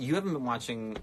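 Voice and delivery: ordinary talk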